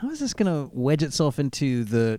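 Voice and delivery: ordinary talk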